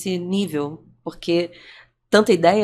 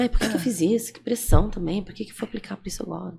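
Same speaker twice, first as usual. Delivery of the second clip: tearful, crying, lamenting voice.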